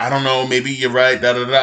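usual speaking voice

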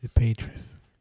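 whispering. Naming a team with another speaker: whispering. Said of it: "Both of them fucking whisper".

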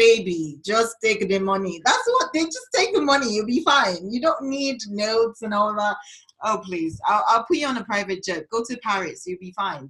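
put-on Nigerian accent, done for effect. Imitating people who tell the speaker to just take the money, in a nigerian accent impression. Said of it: "i'm about to do an accent".

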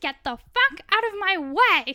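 very loud, high, rude shouting. Retelling how Mary charged past at the door: imitating Mary's rude outburst. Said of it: "she's like".

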